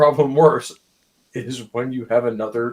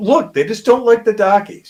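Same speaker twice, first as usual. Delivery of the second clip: put-on old New England accent, loud and high; 8 semitones higher, 6 dB louder than usual. Speaker in a group conversation switching into an old accent: put-on New England accent. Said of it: "bring out my old New England accent".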